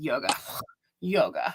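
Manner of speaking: dismissive, ridiculing, derisive, scoffing tone. Retelling a doctor's reply to the speaker, imitating a mocking tone. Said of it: "Like she made fun of me".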